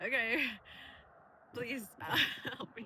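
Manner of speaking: speaking through laughter. Retelling a reply to a man describing his twin: reenacting laughing while talking. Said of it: "I just started laughing".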